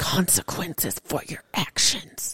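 slow, breathy whisper. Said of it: "I've got the whisper".

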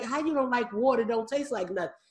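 ordinary delivery

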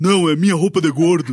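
put-on cartoon father voice. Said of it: "é a voz do dublador do Homer".

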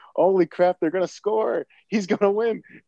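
high, excited, triumphant announcer call. Retelling a baseball movie scene, imitating Bob Uecker: excited. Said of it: "you hear Bob going".

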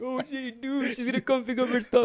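very high, snivelling, whiny put-on crying voice. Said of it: "Why you crying now?".

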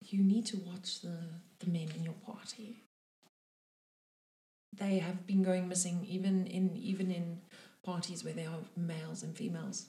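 speaking quite softly. Narrator voicing a character warning the party about missing men, speaking quite softly. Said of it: "quite softly".

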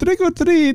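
very high-pitched put-on Indian accent. Retelling saying trick or treat in costume: imitating a put-on indian accent. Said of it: "you're giving me an, an Indian accent".

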